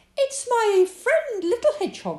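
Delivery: shrill, loud crying-out, pitched way up. Among friends looking into a hat, crying out. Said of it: "cried Rabbit".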